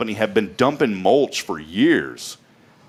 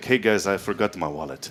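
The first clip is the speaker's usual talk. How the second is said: put-on soft, offhand French-accented delivery; 3 semitones lower, 5 dB quieter than usual. Retelling what Mr. Parker Senior said on nights out, in a French accent. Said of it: "he has the French accent".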